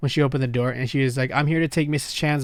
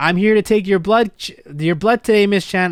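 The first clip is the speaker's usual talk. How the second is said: loud, high raised voice, short of yelling; 6 semitones higher, 6 dB louder than usual. Retelling how the woman taking blood addressed miss chan: imitating her loud voice. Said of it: "she was using a loud voice".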